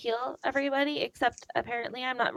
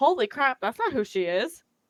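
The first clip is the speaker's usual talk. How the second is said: normal talking voice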